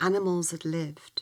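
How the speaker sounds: plain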